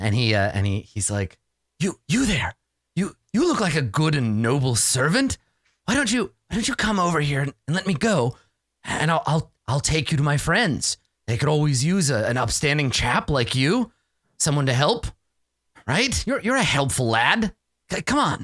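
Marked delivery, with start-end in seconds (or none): 1.8-18.4 hushed, persuasive stage whisper. A storyteller voicing Lord Victor Tweed speaking to a player, in a stage whisper. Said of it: "he sort of stage whispers to you".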